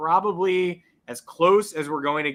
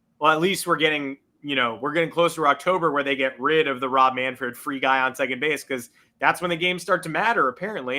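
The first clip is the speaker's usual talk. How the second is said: normal talking voice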